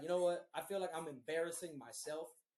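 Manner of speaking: usual speaking voice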